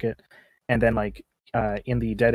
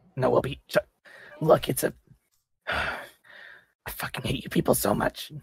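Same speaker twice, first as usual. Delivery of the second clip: slow, raspy, scraped-out voice; 4 semitones higher than usual. Asked to get out of the alley, the character answers the group: raspy voice. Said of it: "She rasps out".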